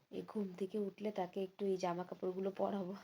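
low, very soft hushed voice. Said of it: "আস্তে আস্তে কথা বলছি".

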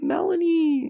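high-pitched, tearful crying voice. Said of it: "Oh, I made her cry".

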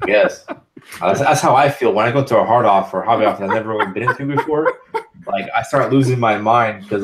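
laughing through the words while talking.

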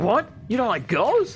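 genuinely stunned outburst, pitched way up. Describing how a man delivers a line in one version, imitating someone sounding shocked. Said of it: "he sounds shocked".

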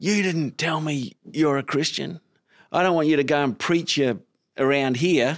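high, furious, in-your-face angry yelling. Retelling how a guy on a job site came up yelling: imitating someone yelling.

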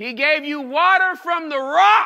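booming, very loud exclamatory emphasis. Reading a passage that ends in an exclamation mark, exclamatory emphasis. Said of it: "why did I say it with that vocal inflection? Because there's an exclamation mark behind it".

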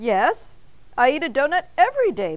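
sheepish, embarrassed, meek tone. Narrator reads Mr. Bing answering Arnie, sheepish. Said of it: "Mr. Bing said sheepishly".

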